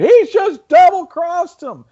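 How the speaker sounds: imitated screaming. Retelling how a front-row fan reacted to a double-cross, imitating a fan screaming. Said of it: "some guy in the front row starts screaming".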